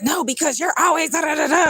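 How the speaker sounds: angry, high, worked-up, flipping-out rant. Retelling how a coworker was yelling at them: imitating her flipping out. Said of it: "she was just flipping out".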